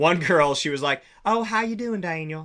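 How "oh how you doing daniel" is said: put-on sugary, friendly Carolina Southern accent, pitched up. Speaker retells a girl from the Carolinas greeting him, imitating a sweet Carolina girl. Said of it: "North and South Carolina".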